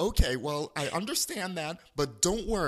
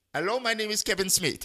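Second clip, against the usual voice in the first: put-on, fake, bad Indian accent; 4 semitones higher, 3 dB louder than usual. Retelling the supervisor who came on the phone: bad indian accent. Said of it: "with a bad Indian accent comes on the phone".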